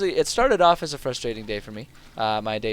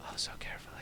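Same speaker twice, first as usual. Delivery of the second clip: unvoiced whisper, much softer. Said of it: "Why am I whispering?".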